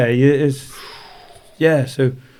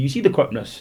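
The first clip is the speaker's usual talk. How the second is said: ordinary delivery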